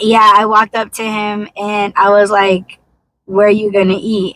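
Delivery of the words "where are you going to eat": put-on rude, snappy tone. Retelling own past question to a partner: imitating own rude tone. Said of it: "I said it in a fucked up way".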